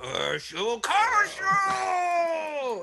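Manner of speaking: high, loud, furious shriek.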